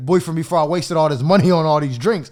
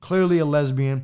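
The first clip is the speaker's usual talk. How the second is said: ordinary talk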